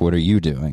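mock-suspicious, acted suspicious tone. Retelling his reaction to what she was doing, in a suspicious tone. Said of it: "like suspicious".

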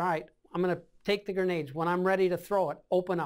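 usual speaking voice

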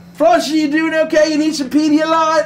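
high, loud calling out.

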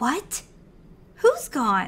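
very loud, swooping panic, barely held in. Her brother says someone is gone; she reacts, panicking but hiding it. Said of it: "She was panicking".

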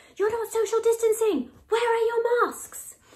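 loud, high-pitched yelling.

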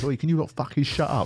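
put-on high-pitched old man voice. Describing an old man telling off noisy teenagers, imitating an old geezer. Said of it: "an old geezer just goes".

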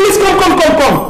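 very high-pitched calling-out shout. A family member calls the father to come over, shouting. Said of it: "And why are you shouting?".

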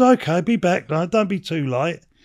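ordinary talk, nothing marked

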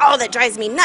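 ordinary delivery

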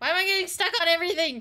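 very loud, rushed, frantic high-pitched panic. A player who hasn't played in long keeps getting stuck, panicking. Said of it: "I'm panicking".

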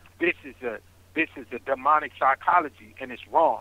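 ordinary talk, nothing marked

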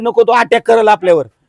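ordinary delivery

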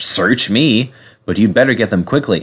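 ordinary delivery

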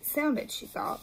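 plain

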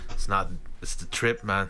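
low attempted Jamaican accent slipping into Australian.

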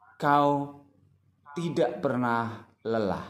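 slow, long break after kau, short after pernah. Reading a line aloud by its pauses, long pause after kau. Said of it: "kau berhenti agak lama, tidak pernah berhenti sebentar, lelah kemudian berhenti karena akhir baris".

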